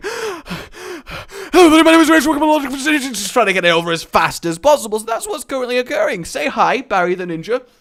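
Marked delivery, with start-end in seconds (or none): 0.0-5.0 put-on scared voice, higher and louder. Retelling recording an intro with a gun held to the head: imitating being scared. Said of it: "all scared and stuff".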